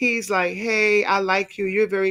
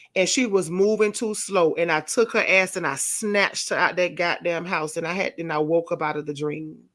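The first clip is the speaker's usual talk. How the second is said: normal talking voice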